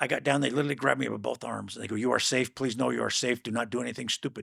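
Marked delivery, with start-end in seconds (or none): 2.0-4.4 put-on Middle Eastern-accented voice. Speaker retelling what armed men said while grabbing the speaker, in a Middle Eastern accent. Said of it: "with an accent".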